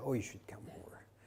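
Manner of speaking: soft, kindly whisper. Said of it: "Catherine very kindly said".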